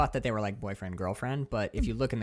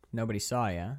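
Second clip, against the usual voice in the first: ordinary talk, nothing marked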